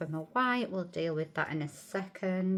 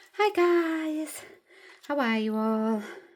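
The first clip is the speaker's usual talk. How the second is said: winded, breathless, very high voice, "guys" stretched out; 9 semitones higher, 7 dB louder than usual. Greeting viewers after just running up the stairs, out of breath. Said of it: "Sorry I'm a bit out of breath".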